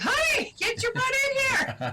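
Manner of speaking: very high, swooping, loud yell. Alone in the ice-fishing shack with a huge catch, retelling: yelling for him. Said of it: "I'm yelling for him".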